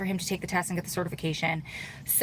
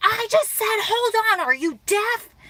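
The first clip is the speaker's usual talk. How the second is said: very high-pitched, shrill, loud screaming; 13 semitones higher, 6 dB louder than usual. Retelling a phone call where the company owner screams: imitating someone screaming. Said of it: "He screams again".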